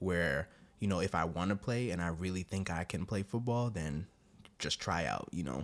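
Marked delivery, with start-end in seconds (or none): none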